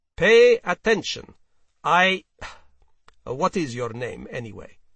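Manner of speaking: affectedly stern, very loud put-on tone. A man orders the other to pay attention, then asks his name: affectedly stern. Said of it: "with an affectedly stern voice".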